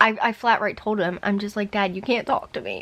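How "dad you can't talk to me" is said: tearful, crying, pleading voice. Retelling speaking to their dad while hurt: retelling talking through tears. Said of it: "I'm like doing this through tears".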